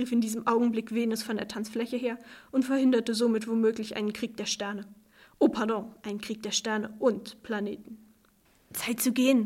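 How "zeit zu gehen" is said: muttered, murmured aside. The narrator speaks to a man once the dancers have left, murmured. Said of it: "raunte ich Jonathan zu".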